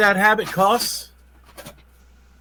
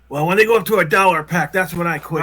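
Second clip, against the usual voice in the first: usual speaking voice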